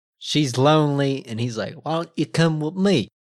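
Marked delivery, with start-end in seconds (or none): 1.7-3.1 failed attempt at New Jersey accent, pitched up. Telling a story, the speaker quotes a man's line; attempted New Jersey accent. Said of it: "I really don't think that that's the New Jersey accent".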